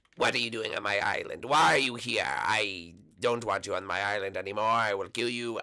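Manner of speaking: witch voice held throughout. Showing how they voice Petey on the mountain in the series: Petey's witch voice. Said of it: "I just do like a witch voice of".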